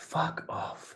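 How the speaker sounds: mock muttering under breath. Retelling a daughter's remark while driving past a church: imitating muttering under breath. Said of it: "under her breath go".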